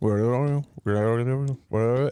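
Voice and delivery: low, repeated, phone-like earpiece delivery. Retelling how a friend talks on an earpiece: imitating Mislav as Uber driver. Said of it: "just like an Uber driver, he's got, like, an earpiece and he's just like".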